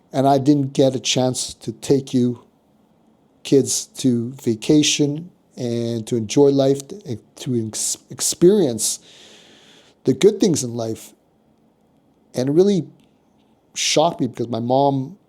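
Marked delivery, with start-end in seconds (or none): none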